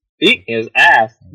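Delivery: robotic, speech-synthesizer computer voice. During a game, a player calls out to teammates in a Hawking robotic voice. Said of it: "it's like uh, you know, uh, Hawking's voice".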